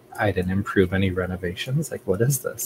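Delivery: quiet mumble under the breath. Voicing a character looking around a changed room: mumbling under her breath. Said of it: "mumbling under her breath".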